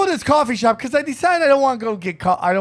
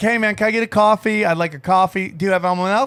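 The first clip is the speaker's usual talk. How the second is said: ordinary talk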